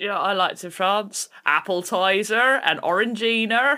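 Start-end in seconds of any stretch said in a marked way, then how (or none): 1.4-3.8 louder Cornish accent. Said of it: "You have to say it in a Cornish accent".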